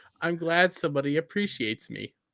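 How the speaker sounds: plain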